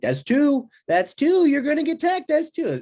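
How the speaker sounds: play-acted, very high, loud coach yell, building up. Retelling the coach's reaction to getting turned in a gut wrench: imitating the coach yelling. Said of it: "I'll start yelling at you".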